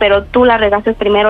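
normal talking voice

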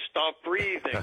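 mock, dry, sarcastic delivery. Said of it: "I would tell her in a sarcastic way".

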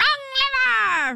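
very high, slow, stretched-out crazy villain woman yell.

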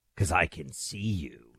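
creepy, very soft, very slow, dragged-out menacing voice. Recalling a caller's line from a horror movie: scary voice. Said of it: "with the scary voice".

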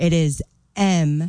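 drawn out word by word, very slow and deliberate. A guest giving listeners the website address: very slow. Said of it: "I'm going to say this really slow".

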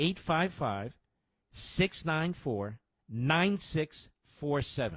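spoken slowly, at a slow pace. Repeating a donation phone number for listeners, said slowly. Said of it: "Let me say that slowly".

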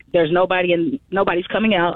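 ordinary talk

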